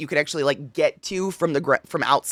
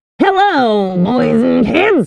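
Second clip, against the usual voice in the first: put-on booming, very loud, rasping old-time radio announcer voice; 7 semitones higher, 10 dB louder than usual. Trying out voices on stream, wondering aloud which one this is; Radio Demon voice. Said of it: "Is this my radio demon voice?".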